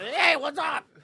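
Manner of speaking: very high, very loud, jittery voice. Acting out a doctor pounding energy drinks: imitating a jittery doctor. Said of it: "over there jittery".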